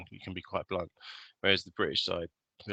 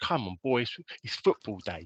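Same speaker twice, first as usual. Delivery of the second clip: unconvincing, bad fake East London accent; 3 semitones higher than usual. Mocking an actor's attempt at an East London accent, bad East London accent. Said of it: "he tries to do an East London accent".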